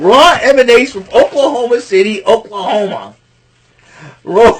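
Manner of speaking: loud, high laughing through the words. Trying to open the recap but cracking up: laughing while talking. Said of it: "I can't even talk".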